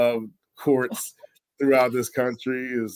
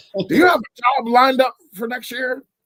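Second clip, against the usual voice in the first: very high, very gruff professor voice; 13 semitones higher, 4 dB louder than usual. Retelling a professor's phone call to Malcolm about a job, imitating a gruff voice. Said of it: "he had this really gruffy voice".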